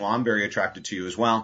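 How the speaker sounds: ordinary delivery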